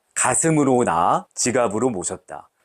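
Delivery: ordinary talk, nothing marked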